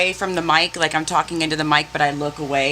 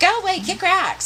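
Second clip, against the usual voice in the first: mock little girl voice, higher; 13 semitones higher than usual. Mocking a woman's comeback as if said by a ten-year-old girl: imitating a little girl. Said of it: "She sounds like a ten-year-old little girl".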